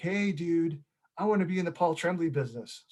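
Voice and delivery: classic surfer dude voice. Retelling what a man said to you on the phone, in a surfer dude voice. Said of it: "in like a surfer dude voice".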